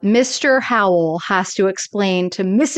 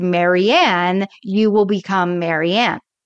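usual speaking voice

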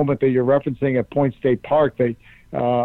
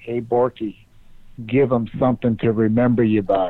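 put-on whispering voice; 3 semitones lower than usual. Retelling words whispered before stepping up to the microphone: imitating someone whispering. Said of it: "whispered in my ear".

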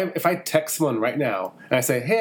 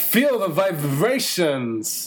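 odd, halting actor voice; 2 semitones higher than usual. Repeating a line in an impression: Christopher Walken voice. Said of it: "now you're going too Christopher Walken".

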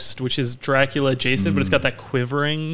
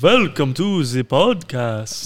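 eerie vampire-style voice. Podcast host asked for a spooky voice for the Halloween special, spooky Dracula voice. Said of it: "I think I'd do like a Dracula".

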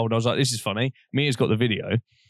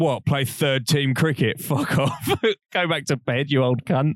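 laughing, jeering, mocking tone; 2 semitones higher than usual. Retelling how they laughed at someone heading back to bed, imitating themself laughing. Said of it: "we laughed and went".

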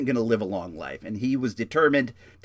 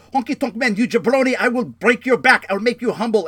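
shrill, high, loud, unhinged screaming rant; 10 semitones higher, 7 dB louder than usual. Retelling how a man screamed at the honky tonk man, imitating someone yelling. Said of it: "he's like yelling at Honky Tonk".

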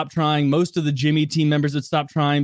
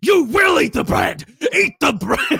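put-on scream, much higher; 12 semitones higher, 3 dB louder than usual. Retelling how a man screamed at a girl; retelling someone screaming. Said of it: "He's screaming at her to eat the bread".

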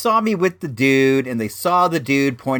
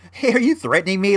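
mock playful, light, high-pitched joking tone; 7 semitones higher than usual. Retelling own question to an armed seller: imitating own joking tone. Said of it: "like I'm totally joking".

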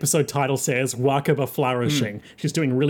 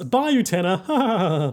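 mock delighted anime laughing, higher pitch; 5 semitones higher than usual. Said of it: "what I'm sure is meant to be a very delighted laugh".

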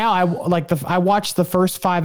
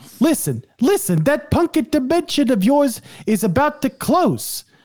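high, clumsy, rough put-on slangy street accent; 7 semitones higher than usual. Reading a book's transcribed dialogue aloud, attempting Alpha 5's jive-talking accent. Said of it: "I can't do the accent really well".

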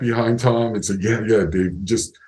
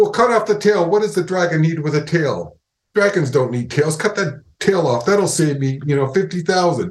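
bossy, exasperated, heated, high-pitched ranting; 5 semitones higher than usual. Speaker retelling an argument with Mickey, imitating Mickey yelling. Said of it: "Mickey just yelled at me and screamed at me".

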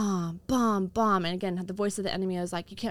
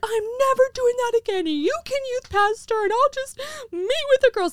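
very high, loud, woe-is-me sobbing wail; 7 dB louder than usual. Retelling a late night at home, the speaker acts out her own sobbing. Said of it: "I'm sobbing".

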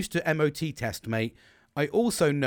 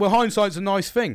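loud, pitched-up, mocking sarcastic tone; 8 semitones higher, 6 dB louder than usual. Quoting a man's reply about a booked MOT appointment, retelling a sarcastic remark. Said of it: "He said it in such a sarcastic way".

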